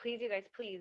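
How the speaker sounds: soft, gentle, polite pleading voice. Retelling how she begged the photographers to leave: imitating a nice, polite plea. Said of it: "she was just like".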